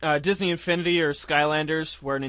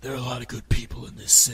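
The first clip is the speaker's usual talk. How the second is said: breathy, barely audible, almost unintelligible vigilante whisper; 5 semitones lower than usual.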